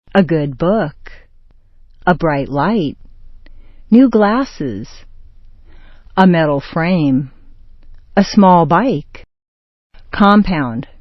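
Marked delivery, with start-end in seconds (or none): 0.1-0.9 stress on the noun book. Adjective-noun description example, stress on book. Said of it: "With a description, adjective, noun, the noun is stressed".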